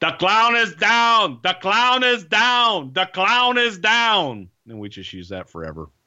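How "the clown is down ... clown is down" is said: put-on high, slow French-accented voice. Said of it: "all we heard in his French accent was".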